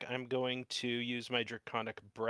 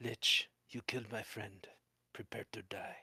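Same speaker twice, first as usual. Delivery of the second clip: private whisper, quietly under the breath; 2 semitones lower, 4 dB quieter than usual. Player voicing T-Bone as he faces the Lich, whispering to himself. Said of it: "going to just whisper to himself".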